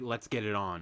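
ordinary delivery

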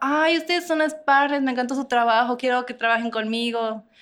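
happy, delighted, gushing, high-pitched voice.

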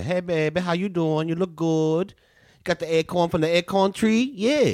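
New Orleans accent. Speaker from New Orleans demonstrating for the other speaker, Cajun accent. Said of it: "I can go Cajun if you need me".

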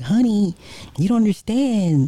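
very high put-on woman's voice. Retelling what she said back to you, imitating a woman's voice. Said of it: "And then in her voice".

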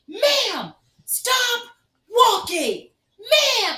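shrill, very high, very loud, very slow drawn-out screaming. Telling a story about an airport shutdown, acting out a man yelling at a woman: imitating a man screaming.

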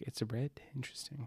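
hushed, whispered voice.

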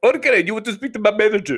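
put-on Indian accent. Retelling a customer service call, quoting the agent, imitating an Indian accent. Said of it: "he had that Southside India dialect".

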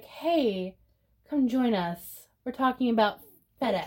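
easygoing, unbothered, calm, cool, casual delivery. Retelling how the promo line was read, imitating own calm, cool delivery. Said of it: "I was trying to be calm, cool".

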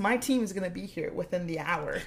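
acted bold, cool, unbothered, confident bravado. Retelling a scene where a character bluffs about backup: imitating a badass bluff. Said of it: "fucking badass bluffs and says".

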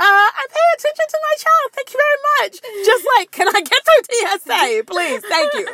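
cheeky, sassy delivery. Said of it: "And I'm like".

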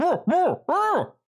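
muffled, panicked calling. A game master describes a voice behind a door, panicked muffled voice. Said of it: "it sounded panicked".

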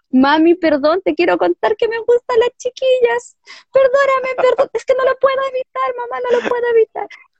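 play-acted, very high, tearful, pleading crying child voice. Retelling confessing to her mother as a six-year-old: imitating her child self crying. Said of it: "y llorando".

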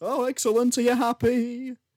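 polite, very high-pitched voice. Reenacting how a movie's closing conversation goes, as the woman: reenacting the film's female lead. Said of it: "a reenactment of what I think the conversation is".

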